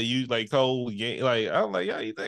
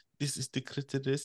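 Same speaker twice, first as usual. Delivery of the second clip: put-on gentle, quiet German accent; 8 dB quieter than usual. Recalling what Dr. Ruth used to say, Dr. Ruth German accent. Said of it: "I don't know where I got a German accent from".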